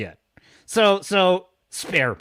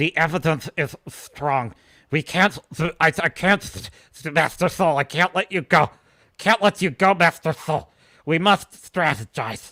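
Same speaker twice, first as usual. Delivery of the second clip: mock through-the-teeth speech, put-on bad acting. Showing how a bad actor talks, imitating her talking through her teeth. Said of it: "She talks through her teeth. She talks like this".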